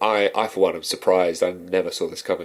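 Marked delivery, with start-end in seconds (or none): none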